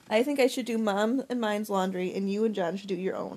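plain reading voice

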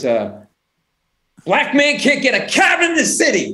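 very slow, high, drawn-out, rising wailing scream. Retelling a man in his underwear and boots yelling, imitating his screaming. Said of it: "and he's screaming".

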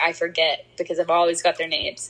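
plain

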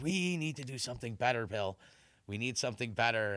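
normal talking voice

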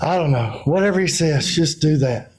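mock exasperated, frustrated voice. Acting out the mother telling the servants to obey: imitating an exasperated mother. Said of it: "Put the emotion in it".

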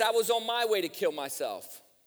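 normal talking voice

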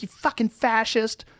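high, shrill, loud screaming. Describing a video of a woman in a police officer's face, imitating a woman screaming. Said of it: "woman screaming in this cop's face".

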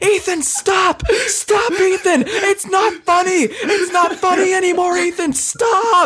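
play-acted screaming, voice shooting up very high. Retelling spinning around at top speed, imitating Zach screaming at Ethan. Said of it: "Zach is just screaming".

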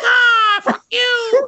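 very high, loud, crow-like squawking yell. Asked to do the bird impression again, yelling in the crow voice. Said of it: "just a guy yelling like that".

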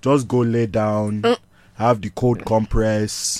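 put-on dad voice in an invented accent. Retelling being sick, speaker quotes dad's advice in a put-on accent. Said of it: "My dad don't actually talk like this".

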